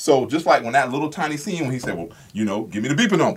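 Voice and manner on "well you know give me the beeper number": low, heavy large-man voice. Quoting a scene after praising the actor's voice: imitating Zeus's deep booming voice. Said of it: "Deep voice. So whenever he speaks, it booms".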